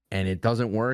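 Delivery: ordinary talk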